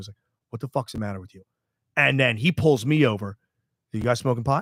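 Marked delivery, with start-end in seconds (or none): 0.5-1.4 mock furious growl, very quiet, low and hushed. Speaker retells dad snatching up Pat, imitating dad's angry growl. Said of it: "is like growling at him".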